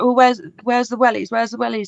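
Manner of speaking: mad, insistent, angry, repeated pressing. Retelling how he got mad asking about the wellies: imitating an angry demand. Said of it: "he just got really mad".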